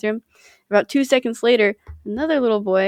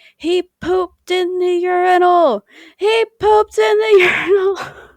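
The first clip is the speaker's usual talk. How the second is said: put-on shrill, high, loud, very drawn-out child's yell; 9 semitones higher, 5 dB louder than usual. Retelling what a little boy shouted while running out: imitating a child shouting. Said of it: "he's shouting".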